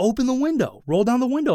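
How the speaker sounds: put-on insistent, demanding, high yell. Retelling a man yelling at the car window: imitating a man yelling. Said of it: "yelling at me".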